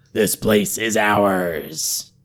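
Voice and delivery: hoarse, menacing voice, very slow. Replying from hiding to a traveler who called hello, hoarse and menacing. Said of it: "came the reply in a hoarse, menacing voice".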